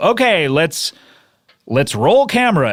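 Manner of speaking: normal talking voice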